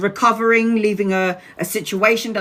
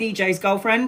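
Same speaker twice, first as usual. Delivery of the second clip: plain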